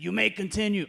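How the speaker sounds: put-on crusty, gravelly, grizzled old man voice. Like a weathered old regular in a support group grudgingly giving a newcomer permission to go on, gravelly and dry. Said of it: "I don't know why I do that voice".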